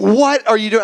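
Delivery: play-acted furious, freaked-out angry yelling outburst. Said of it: "I get so angry".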